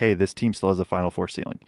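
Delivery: ordinary delivery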